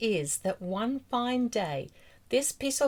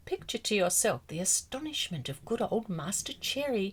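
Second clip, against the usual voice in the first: ordinary delivery, nothing marked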